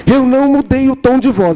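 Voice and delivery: high, protesting tone.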